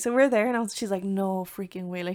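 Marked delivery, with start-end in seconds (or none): 1.0-2.0 stunned, shocked, can't-believe-it disbelief. Retelling a reaction to a stage with no sound: imitating someone in shock. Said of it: "she's in shock".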